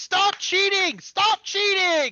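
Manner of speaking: shrill shriek, very high, at full volume. Voicing a character at a gaming table who sees cheating: screaming in character. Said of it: "Allie's screaming".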